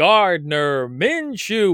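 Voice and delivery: slow, drawn-out wrestling ring announcer voice.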